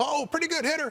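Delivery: very high-pitched, needling, teasing voice. Retelling Jackie Robinson teasing a batter from first base: Jackie Robinson high-pitched voice. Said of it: "he had kind of the high-pitched voice".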